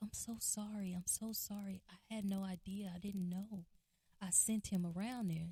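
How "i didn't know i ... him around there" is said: ordinary talk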